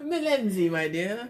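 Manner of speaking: put-on elderly British accent, old man voice. Saying the duo's name MillenZee the way you always do, old British man voice. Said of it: "like I'm an old British man".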